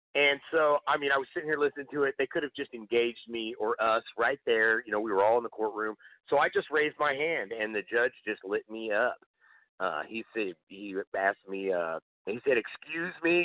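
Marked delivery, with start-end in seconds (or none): 12.6-13.5 imitated, extremely aggressive tone, pitched higher. Retelling how the judge spoke after a hand was raised: imitating an extremely aggressive tone. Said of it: "extremely aggressively".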